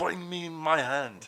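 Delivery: bad put-on French accent. Voicing the French soldier with a missing hand from the story; bad fake French accent.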